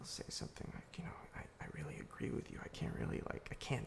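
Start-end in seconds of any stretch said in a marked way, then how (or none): 1.4-3.9 soft, breathy, under the breath. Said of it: "like, under their breath".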